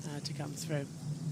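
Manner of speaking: low, soft, hushed commentary voice.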